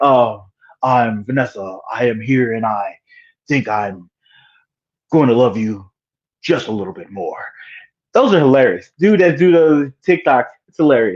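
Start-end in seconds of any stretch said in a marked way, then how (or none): 0.0-7.4 low, mocking put-on voice. Retelling a TikTok that makes fun of how Kingpin talks: imitating Kingpin's way of talking. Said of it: "making fun of the way Kingpin talks".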